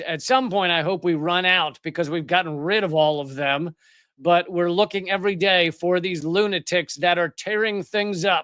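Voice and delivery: plain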